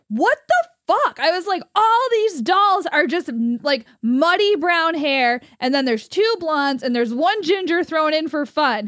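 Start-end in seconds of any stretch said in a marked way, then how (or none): 0.1-1.2 sudden, high, yelled outburst. Telling her boyfriend about looking down a doll aisle, retelling a yell. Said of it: "I went and I yelled".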